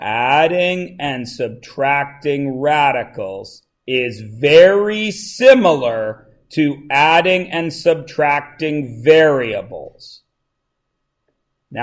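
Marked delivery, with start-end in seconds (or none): 0.0-10.2 very slow, deliberate delivery, each word stretched out. Repeating a point to the class after one hand went up, saying it slower. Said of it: "I'm going to say this slower".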